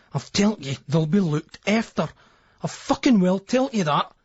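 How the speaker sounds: strained whisper through clenched, gritted teeth. A narrator reading a man's words to a woman, strained whisper through teeth. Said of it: "Speaking through his teeth in a strained whisper".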